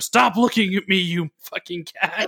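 high, mild, put-on half-yell. Retelling the main character screaming at a cat, retelling a scream. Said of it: "the main guy just screams at the camera".

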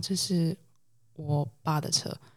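put-on embarrassed tone. Retelling what he said when asked about his license plate; retelling an awkward reply. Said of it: "他就一脸尴尬地说".

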